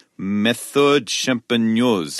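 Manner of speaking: so-so, attempted put-on French accent. Reading a wine label aloud when asked, in an attempted French accent. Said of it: "if that's my French accent".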